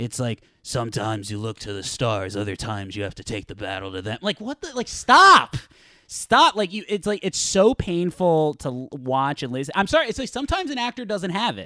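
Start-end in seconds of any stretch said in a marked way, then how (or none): 0.6-4.2 flat, low, gruff monotone drone. Mocking an actor's delivery, quoting him in a monotone gruff impression. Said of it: "in this like monotone gruffness".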